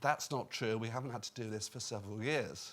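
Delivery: normal talking voice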